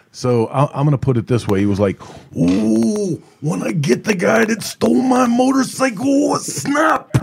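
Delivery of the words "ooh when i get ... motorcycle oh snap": very high, drawn-out showman voice, "ooh" stretched. Doing the voice for the others, imitating Macho Man. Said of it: "I wanted you to do the voice".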